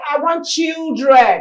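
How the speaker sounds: mock, very loud, high, sarcastic begging plea. Imitating someone praying to God for children: sarcastic imitation of a prayer. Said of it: "I'm just being sarcastic about it".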